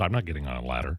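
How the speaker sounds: very low, hushed, patronizing, condescending tone. Quoting a line from one of his commercials, condescending Tony Katz impression. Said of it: "Very condescendingly".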